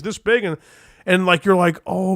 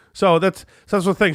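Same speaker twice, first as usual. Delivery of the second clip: ordinary talk, nothing marked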